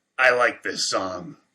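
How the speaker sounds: hoarse, croaking, gravelly voice. Reading a story aloud, voicing a gravedigger's line: croaking gravelly voice. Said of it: "croaked Edith, in the gravelly voice".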